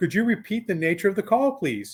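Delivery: thrilled, humorous voice. Retelling a paramedic's question over the radio: imitating a thrilled, amused asking. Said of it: "absolute thrill and humor in their response".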